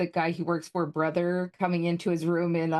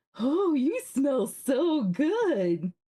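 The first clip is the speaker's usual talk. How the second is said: creepy, very slow, high sing-song, "good" stretched out; 8 semitones higher than usual. Retelling how the bear sniffed at the screen: imitating Bear from Bear in the Big Blue House. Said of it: "the creepy one that would come sniffing up at the T V".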